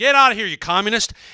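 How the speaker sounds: piercing, very loud, very high shrill scream. Retelling how a neighbor screamed at a cable installer: imitating a man screaming. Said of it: "he kept saying it over and over".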